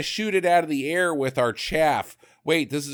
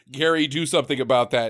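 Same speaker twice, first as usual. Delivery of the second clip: ordinary delivery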